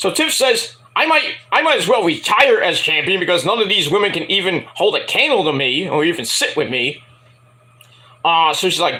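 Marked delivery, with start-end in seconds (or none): none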